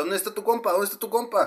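high, demanding voice. Retelling how an officer pointing a gun demanded: imitating an armed officer demanding. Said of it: "me estaba apuntando con la pistola".

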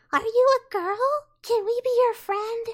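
put-on tiny, squeaky child voice, very high-pitched. Imitating kids heard in online game matches, in a squeaky little kid voice. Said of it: "got these little squeaky voices".

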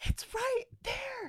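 very high, shrill, piercing scream. Retelling a woman pointing at the dark front door, retelling her screaming. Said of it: "She's pointing and she's screaming".

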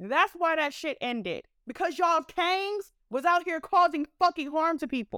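enraged, furious, raw rant. Ranting to listeners about why an event was shut down, furious. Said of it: "I'm fucking furious".

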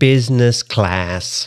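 put-on American accent. Accent imitation game on advanced setting, American accent. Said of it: "You're good at imitating the American accent".

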